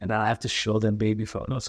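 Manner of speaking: ordinary talk, nothing marked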